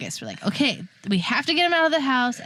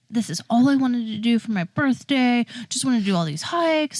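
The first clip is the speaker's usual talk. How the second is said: mock angry, mad tone. Retelling his complaint after the hikes were cut short: imitating him being mad. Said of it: "he was so mad at me".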